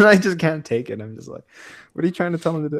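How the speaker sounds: plain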